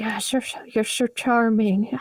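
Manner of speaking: eerie spirit-like voice. Game master telling a player the ghostly voices around them speak: ghostly voice. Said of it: "you hear ghostly voices come around you and be like".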